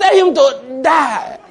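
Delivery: slow, high, mock preacher-style shout.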